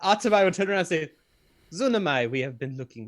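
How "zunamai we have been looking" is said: put-on, very deep, very low dropped register. Voicing Atabai greeting Zunamai, slipping by mistake into talking like Adeline. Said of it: "I'm talking like Adeline".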